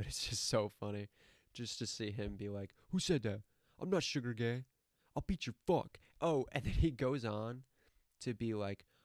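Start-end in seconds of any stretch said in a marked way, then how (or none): 2.9-6.0 angry, threatening, pissed-off outburst. Imitating a man from many YouTube videos who gets pissed off, imitating an angry rant. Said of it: "He gets so pissed off".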